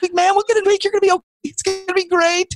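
cheery, upbeat, encouraging voice, pitched very high. Speaker imitates Jessie cheering him on about his weigh-in: Jessie impression. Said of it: "my impression of Jessie".

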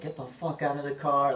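furious, high, loud enraged screaming. Man recounting running over to confront whoever was in a car, retelling a scream. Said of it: "I started screaming".

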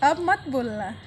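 soft, hushed, soothing pet-talk voice.

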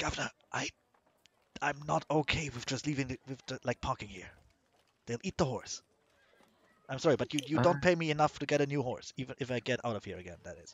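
very worried whisper. A cart driver leans back to speak to the governor, in a very worried whisper. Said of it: "in a very worried whisper".

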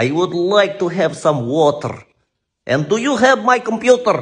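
put-on loud Russian accent. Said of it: "what they say in Russia".

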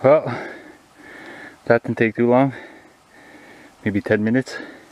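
winded and breathing hard, out of breath. Just finished cutting a fallen tree with an axe, out of breath. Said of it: "but I'm out of breath".

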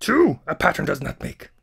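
rough, creaky croaking voice. Talking about feeling watched, the speaker slips into a Yoda impersonation. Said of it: "That was my Yoda impersonation".

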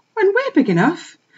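timid, worried, nervous, very high-pitched voice. Reading a puppy asking its mother about the boss, rather nervously. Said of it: "said another rather nervously".

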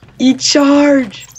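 high, loud, excited, joyful cry.

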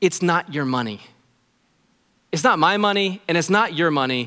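tender, loving, caring pastor voice. A pastor challenges his listeners about money; loving pastor voice. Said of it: "I wanna say this in my most loving pastor voice".

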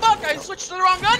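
panicked shouting, high-pitched.

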